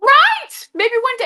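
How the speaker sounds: very high, very loud, shrill excited scream. Hoping a clip gets cut out and given to them someday, screaming excitedly. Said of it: "I'm sorry if I'm screaming".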